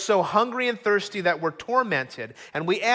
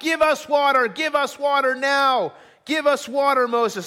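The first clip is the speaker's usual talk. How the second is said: put-on furious crowd yelling, high pitched; 6 semitones higher, 3 dB louder than usual. Preacher retells the people surrounding moses, imitating a shouting crowd. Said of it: "they're shouting".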